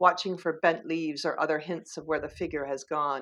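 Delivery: plain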